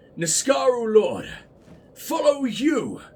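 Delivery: slow, cool, persuasive voice.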